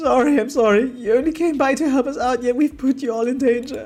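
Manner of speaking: very high, loud sobbing through tears. A workmate apologizes to those who came to help, crying. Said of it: "can you stop crying?".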